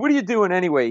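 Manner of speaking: acted-out, high-pitched drunk man's hollering. Retelling a stand-up gig, a drunk bar patron yells at the comic: imitating a drunk man yelling. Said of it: "He yells at me".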